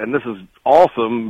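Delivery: ordinary delivery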